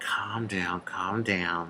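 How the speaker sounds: hushed, slow, drawn-out, very soft half-whisper. Retelling how another officer stepped over, imitating his half-whisper. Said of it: "So he's whispering".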